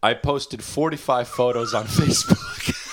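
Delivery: words read through laughter.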